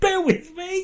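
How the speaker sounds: high-pitched, squeaky, mock apologetic voice. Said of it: "I assumed you were talking to your cock".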